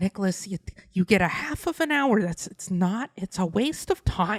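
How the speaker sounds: put-on motherly voice. Asked to repeat a rule in their mother's voice, imitating mother's voice. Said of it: "say it in her voice".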